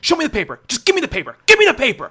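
very high, loud, climbing, swooping scream. Retelling a traffic court guard screaming at an elderly woman: imitating a guard yelling. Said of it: "this one guard was yelling, like, screaming".

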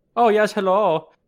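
very loud, shrill, high put-on German accent. Asked by friends to try one, attempting a german accent. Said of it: "A German accent?".

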